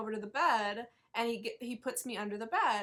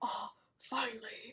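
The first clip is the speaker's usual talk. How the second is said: put-on creepy killer voice, quieter; 5 dB quieter than usual. Retelling a haunted house actor pulling up the keys: Buffalo Bill voice. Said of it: "Buffalo Bill voice".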